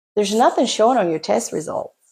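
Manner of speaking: ordinary delivery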